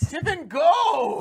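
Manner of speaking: shouting. Ordering a companion named Tippin to flee: yelling. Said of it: "as I yell for him to go".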